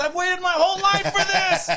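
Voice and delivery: very high, piercing, shrill screaming yell. Retelling a lady in a packed theater: imitating a lady screaming. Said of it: "just scream at the top of her lungs".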